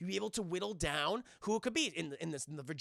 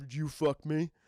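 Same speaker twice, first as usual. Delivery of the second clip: low, breathy voice. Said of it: "my sexy, uh, Buffalo Bill dance".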